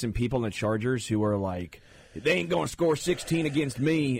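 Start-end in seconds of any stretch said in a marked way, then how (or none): 2.2-4.2 put-on Southern accent, higher pitch. Acting out an opposing player's boast: Pistol Pete voice. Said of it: "the Oklahoma State mascot right there was what I was going for".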